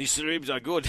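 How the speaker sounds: put-on Portuguese accent. Asked what Ronaldo would say about the ribs, answering in a Portuguese-accented Ronaldo impression. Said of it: "that sounds Portuguese".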